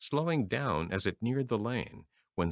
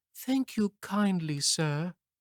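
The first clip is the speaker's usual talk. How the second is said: weak, frail, feeble high voice; 8 semitones higher than usual. Reading a story aloud, Toad thanking a gentleman: feeble voice. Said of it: "said Toad in a feeble voice".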